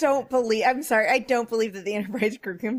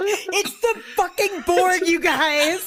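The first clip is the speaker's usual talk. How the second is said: very slow, drawn-out, shouted complaining tone; 6 semitones higher than usual. Imagining Riker yelling at the TV: imitating Riker yelling at the TV. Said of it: "He's, like, yelling at it".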